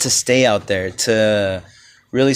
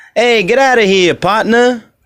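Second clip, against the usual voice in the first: Italian-Southern accent, Memphis style; 9 semitones higher, 4 dB louder than usual. Imagining how Italians from Memphis would talk, a Memphis Italian accent. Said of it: "imagine Italians from Memphis".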